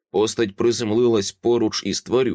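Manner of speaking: ordinary delivery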